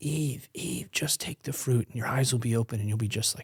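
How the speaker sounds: acted-out hushed whisper. Recalling playing Satan opposite a coworker's wife as Eve, retelling a whisper. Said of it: "I'm whispering to her".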